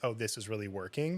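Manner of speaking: plain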